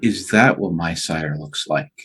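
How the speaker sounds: breath-only half-whisper, very soft, under the breath. Speaking in character, wondering aloud to oneself: barest half-whisper. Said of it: "and I will whisper".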